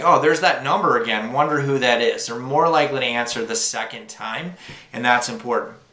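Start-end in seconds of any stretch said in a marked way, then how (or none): none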